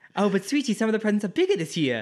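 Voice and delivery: put-on very high, swooping, upper-class English child voice. Speaker quoting a line from Sorcerer's Stone: posh British accent. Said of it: "That is a spot-on British".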